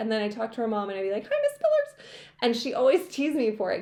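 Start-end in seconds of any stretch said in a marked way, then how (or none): 1.2-2.1 pitch shooting up, voice very high. Recalling greeting a friend's mom as a teenager, the speaker uses a really high voice. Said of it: "my voice would get really high".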